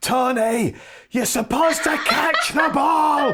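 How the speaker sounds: very high, furious, shrill, drawn-out scream. Retelling a livid shout at a struggling fullback: retelling a furious scream. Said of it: "I screamed as loud as I could".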